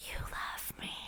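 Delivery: imitated whisper. Acting out a film character whispering in someone's ear: imitating a whisper. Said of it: "whispering in his ear".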